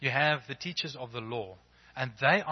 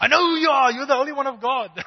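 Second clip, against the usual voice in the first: put-on demonic terror, very high, very loud, shrill; 13 semitones higher, 10 dB louder than usual. Speaker retelling the scene, voicing the demon speaking to Jesus: acting out a panicked demon. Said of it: "You can hear the panic in this demon's voice".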